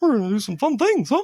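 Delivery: very high cartoon mouse voice. Recalling one of his first childhood impressions, doing a Mickey impression. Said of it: "You're a very good mimic".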